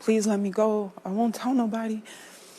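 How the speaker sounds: pleading voice. Retelling own past words to him, retelling own pleading. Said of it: "I'm asking him".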